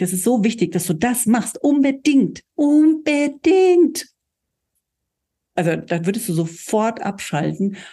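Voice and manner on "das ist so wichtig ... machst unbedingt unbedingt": insistent, urgent, emphatic, with swooping pitch. Acting out how the speaker might tell the listener: very insistent, urgent. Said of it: "ganz eindringlich".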